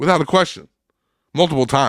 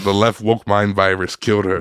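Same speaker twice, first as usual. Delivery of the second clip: ordinary talk, nothing marked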